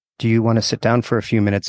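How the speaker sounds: plain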